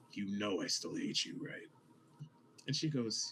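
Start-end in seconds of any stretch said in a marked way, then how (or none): 0.1-1.6 whispered aside, kept close. Voicing a character who whispers to a former partner: whispering. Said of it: "he kind of whispers at her".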